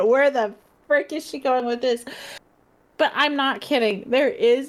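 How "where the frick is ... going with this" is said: normal talking voice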